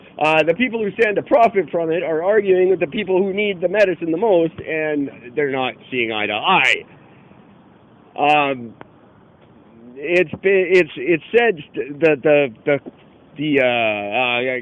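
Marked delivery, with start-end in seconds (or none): 10.0-14.6 stuttering, stammering delivery. Explaining generic drug price legislation after a police scare: stuttering. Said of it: "sorry, I'm stuttering here".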